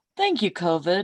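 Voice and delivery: TV-ad announcer voice. Showing how he jokes about it with someone, in a commercial voice. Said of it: "almost like in a commercial voice".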